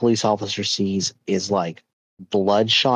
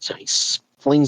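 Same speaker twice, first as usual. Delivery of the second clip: ordinary delivery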